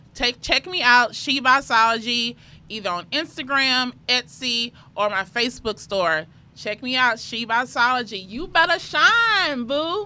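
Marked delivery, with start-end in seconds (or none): 8.3-10.1 pitched-up, commercial-style tagline delivery. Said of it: "Did you have to do that little thing at the end?".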